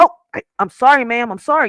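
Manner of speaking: put-on meek, sheepish, cowed apologetic tone. Speaker describes men scolded by a woman; imitating men apologizing to mama. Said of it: "like they're apologizing to their mama".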